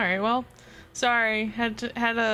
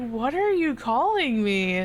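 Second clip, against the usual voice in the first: mock baffled, puzzled, slow, confused tone. Retelling asking classmates about a nickname: imitating own confused question. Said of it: "so genuinely confused".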